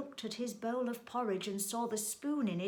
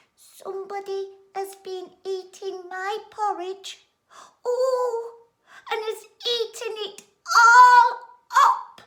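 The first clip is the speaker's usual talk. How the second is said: put-on very high, loud, squeaky baby voice; 12 semitones higher, 15 dB louder than usual. Narrator reading a story, Little Bear looks at his porridge bowl, Little Bear's small squeaky baby voice. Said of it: "in his small, squeaky baby voice".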